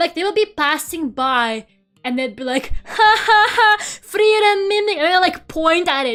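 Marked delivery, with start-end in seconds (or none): 2.8-5.0 high, loud, drawn-out put-on jeering laugh. Retelling how passersby laughed and pointed: imitating people laughing at it. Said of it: "people kept laughing at it".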